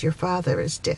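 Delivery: normal talking voice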